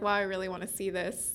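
ordinary talk

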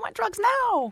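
put-on very high-pitched spoiled-kid voice. Explaining how to give an inner voice a funny voice: Veruca Salt voice. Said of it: "Mine's Veruca Salt from Charlie and the Chocolate Factory. She's like".

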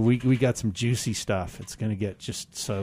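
normal talking voice

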